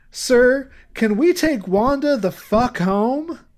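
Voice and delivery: sweet, innocent voice, high and slow. Retelling a film scene where the mother asks the judge: sweet innocent Patricia Hearst impression. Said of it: "gives the nicest, sweetest, funniest fuck".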